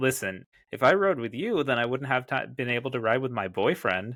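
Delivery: ordinary delivery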